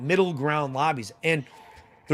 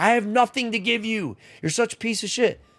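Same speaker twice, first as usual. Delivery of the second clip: acted unhinged, frantic, high-pitched tirade; 7 semitones higher than usual. Retelling how he flipped out on a guy, the speaker acts out losing it in rage. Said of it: "I was like fucking losing my mind".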